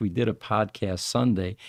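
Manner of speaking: ordinary delivery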